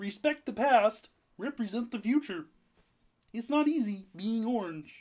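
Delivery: cartoon frog puppet voice. Reading a new team tagline aloud, then a joke: Kermit the Frog voice. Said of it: "I can also do Kermit the Frog".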